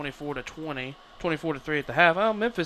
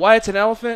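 normal talking voice

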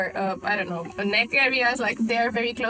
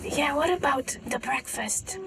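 ordinary delivery

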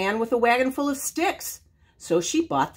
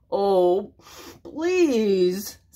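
put-on sniffling, snuffling voice; 3 semitones lower than usual. Big Bad, at the little pig's door, answers the pig: sniffled. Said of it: "sniffled Big Bad".

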